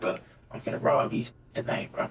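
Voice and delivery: imitated whisper. Retelling what someone whispered in their ear: imitating a whisper. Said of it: "he whispered in my ear".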